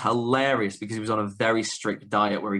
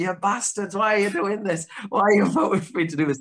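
put-on, shrill, very high-pitched scream; 10 semitones higher, 3 dB louder than usual. Retelling a match where the crowd voted on moves: retelling own screaming. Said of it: "And I'm just screaming".

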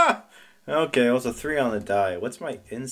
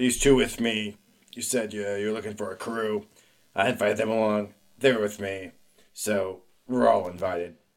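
speaking low and furious; 4 semitones lower, 3 dB quieter than usual. In a tabletop game, a Mandalorian defends his friends to another character: very angry Mandalorian. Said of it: "Very angry Mandalorian".

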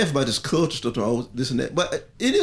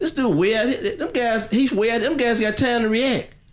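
squeaky voice, higher pitch. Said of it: "with that little squeaky voice".

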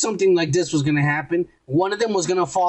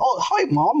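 put-on British accent, pitched a touch higher; 6 semitones higher than usual. Retelling a scene where Steven takes over: Steven's British accent. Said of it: "his little fucking British bullshit that he does".

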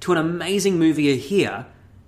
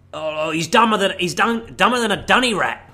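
put-on fake Australian accent; 3 semitones higher than usual. Quoting an actor's line from a film: Hugh Jackman's fake Australian accent. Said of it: "doing a fake Australian accent".

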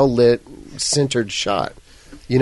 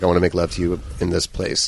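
put-on whisper, lower pitch; 6 semitones lower, 4 dB quieter than usual. Retelling a drunk man's line from a film scene: imitating a whisper.

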